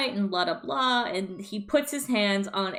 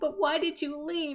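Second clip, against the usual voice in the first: put-on high voice of a ten-year-old boy; 7 semitones higher, 3 dB quieter than usual. Retelling a roleplay scene, a little boy asks his mom a question; imitating a ten-year-old boy. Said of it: "he's like ten years old".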